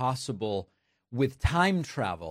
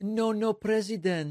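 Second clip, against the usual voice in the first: put-on English with a Mexican Spanish accent; 8 semitones higher than usual. Retelling a phone call from the president of Mexico, in a Mexican Spanish accent. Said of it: "of a Mexican person who learned to speak English as a second language".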